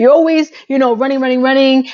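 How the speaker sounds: put-on furious, nagging rant in a rage. Retelling her going off at him: imitating her angry rant. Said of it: "She went crazy at him".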